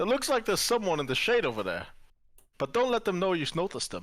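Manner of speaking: loud, high-pitched attempted whisper that stays loud. Trying to whisper to your party in character, loud attempted whisper. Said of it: "that was really loud of you".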